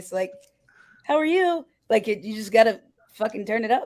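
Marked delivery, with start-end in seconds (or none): 1.0-1.7 very high, polite, courteous service-style voice. Showing how people sound on the phone with customers: customer service voice. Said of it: "let alone a customer service voice".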